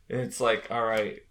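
ordinary talk, nothing marked

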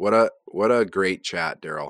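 mocking, sarcastic tone. Wrapping up an episode with a co-host: sarcastic. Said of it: "you're being sarcastic".

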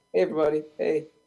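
innocent-sounding superhero voice. Discussing a movie, imitating Peter Parker greeting everyone, innocent Peter Parker voice. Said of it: "that innocent Peter Parker voice".

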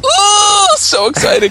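very high, loud, excited pig-like squeal. Reacting with excitement, squealing. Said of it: "You just squeed".

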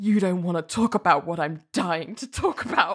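play-acted, darkly threatening, creepy, ominous delivery. Retelling a line someone said in a story, mock-ominous. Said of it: "really ominously".

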